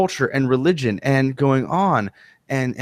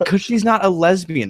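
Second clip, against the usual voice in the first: ordinary talk, nothing marked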